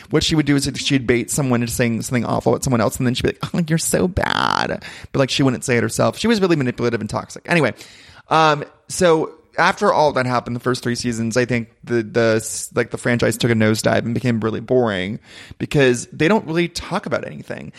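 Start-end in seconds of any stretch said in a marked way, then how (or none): 3.5-4.8 put-on very slow, creaky, coy baby talk, drawn out. Imitating a housewife from season one: Camille Grammer's coquettish baby voice. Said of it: "coquettish baby voice".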